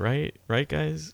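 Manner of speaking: acted joking tone with audible doubt, unsure. Imitating Nick Ross being funny to the guys: imitating Nick Ross's doubtful tone. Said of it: "you could hear the doubt in his voice".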